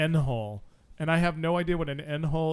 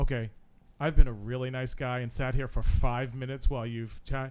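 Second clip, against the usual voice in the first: mock overly polite, pointed, passive-aggressive tone; 4 semitones lower than usual. Retelling sitting and waiting while someone chats: imitating own passive-aggressive tone. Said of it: "I get all passive aggressive because it's like".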